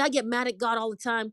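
plain

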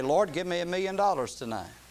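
ordinary talk, nothing marked

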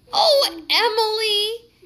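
very high giggling voice, laughing through words, drawn out. Reading the story, the narrator voices Heidi answering Emily, giggling Heidi voice. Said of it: "giggled Heidi".

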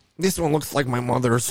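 put-on Yiddish-inflected accent.

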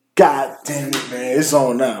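ordinary talk, nothing marked

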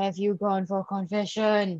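dark, portentous, ominous, foreboding tone. Speaker putting a question to the other speaker, in an ominous tone. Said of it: "That sounded super ominous".

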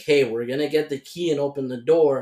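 normal talking voice

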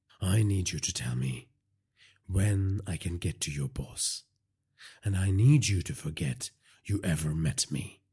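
plain

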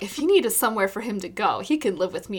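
ordinary talk

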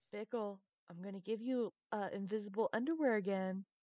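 quiet whisper, in character. Voicing a character who whispers a threat into a passed-out companion's ear: whispering in character. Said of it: "whisper in his ear".

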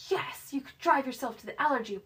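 mock eager, worked-up, excited high voice. Telling a story, quoting a man's reply, imitating someone excited. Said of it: "he got real excited".

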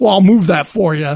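put-on angry voice. Retelling what a man at the cart corral said to the speaker, imitating an angry voice. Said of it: "and he's in an angry voice".

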